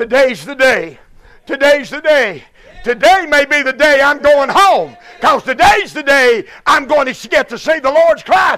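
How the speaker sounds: very loud, high, thrilled and eager excited shout. Acting out old Simeon answering why he's hurrying: excited old Simeon. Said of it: "what are you so excited about".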